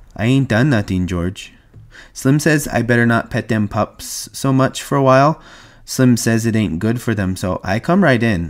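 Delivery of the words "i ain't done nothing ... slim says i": ordinary delivery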